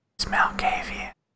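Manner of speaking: hushed whisper. Game master voices a very old vampire speaking to a player, whispering. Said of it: "leans in and whispers to you".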